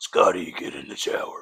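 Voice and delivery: raspy, rasping goblin voice. Playing the shower goblin calling Scotty to the shower, in a Batman-like goblin voice. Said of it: "more Batman than Goblin".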